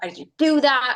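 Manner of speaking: angry scolding tone. Speaker illustrates how some people talk to themselves, angry self-scolding. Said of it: "we get angry with ourselves".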